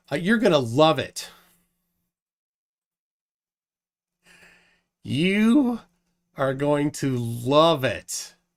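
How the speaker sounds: slow, sarcastic drawl, heavy sarcasm on "you". Announcing a blast from the past: sarcastic. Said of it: "sarcasm here".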